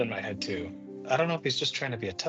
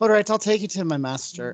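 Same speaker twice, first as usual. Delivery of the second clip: put-on Irish accent, higher and louder; 7 semitones higher, 7 dB louder than usual. Narrating a character who puts her hand on Adon's arm, Irish accent. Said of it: "That's more Irish than before".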